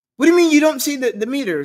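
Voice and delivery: very high, shrill shouted outburst. Retelling how a taxi driver shouted at him: imitating the driver shouting. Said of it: "he kinda shouted".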